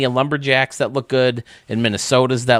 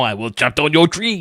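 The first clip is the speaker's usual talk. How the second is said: put-on poor French accent, higher pitch; 4 semitones higher than usual. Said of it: "I don't do a good French accent".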